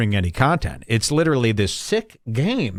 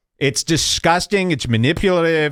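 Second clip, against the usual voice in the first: ordinary talk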